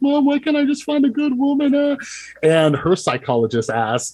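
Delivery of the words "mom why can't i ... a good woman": mock drunken sobbing, very high and tearful. Retelling a drunk phone call to mom: imitating own crying. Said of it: "called her crying".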